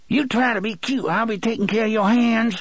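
speaking muffled. Narrator reads her line to the frozen man, in a muffled voice. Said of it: "she said in her muffled voice".

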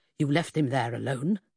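ordinary delivery

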